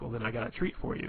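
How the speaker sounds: usual speaking voice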